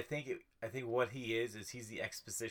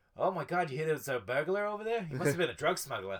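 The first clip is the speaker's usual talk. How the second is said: put-on raised voice, Boston accent; 4 semitones higher, 5 dB louder than usual. Discussing how Jason Mantzoukas slips back into his accent, the speaker imitates his Boston accent. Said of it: "he has ways of jumping back into his accent".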